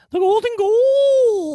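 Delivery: shrill, booming, high goal, stretched out long. Doing a Chris Cuthbert impression for the other speaker: high-pitched Chris Cuthbert impression. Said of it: "I love his high pitch".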